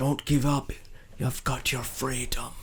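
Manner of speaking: stage whisper, close to the ear. Speaking in character into a hurt companion's ear: whispering. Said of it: "I whisper into Matt's ear".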